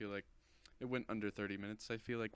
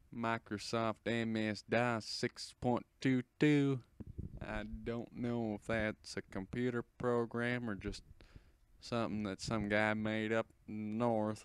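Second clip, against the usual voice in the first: clumsy, bad put-on American southern accent; 3 dB louder than usual. Offering to do voices, the speaker tries a bad southern accent. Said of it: "I can even do a southern accent".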